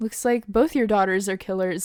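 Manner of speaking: usual speaking voice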